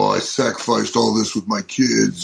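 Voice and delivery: ordinary talk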